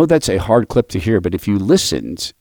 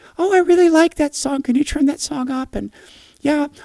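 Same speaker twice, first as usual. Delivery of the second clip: put-on very high, squeaky little-kid voice. Retelling what a kid said in the car, in a high, squeaky voice. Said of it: "in this high, squeaky voice".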